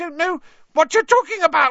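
shrill very high squeal. Reading the story aloud, Pettigrew answers an accusation: shrill Pettigrew voice. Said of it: "more shrilly than ever".

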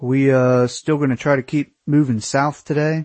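ordinary talk

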